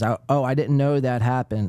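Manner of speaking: ordinary delivery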